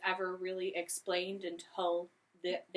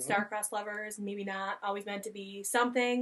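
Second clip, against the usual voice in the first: plain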